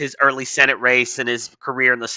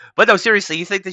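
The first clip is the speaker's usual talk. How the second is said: usual speaking voice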